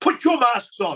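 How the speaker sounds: high, loud schoolteacher-style yell. Recounting an MP yelling out in Parliament, retelling a schoolteacher-like yell. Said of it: "she yelled out".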